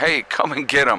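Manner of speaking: loud yell, calling out at full volume. A speaker yells at a man driving past, yelling. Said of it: "So sorry for yelling at you guys".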